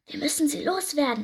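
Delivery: whispering. One pirate speaks to the other, whispered. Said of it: "flüsterte der eine".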